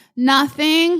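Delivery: put-on high, sheepish, guilty little-kid voice. Acting out a little kid answering a yelling mom, imitating a caught little kid. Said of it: "That's what she sounded like".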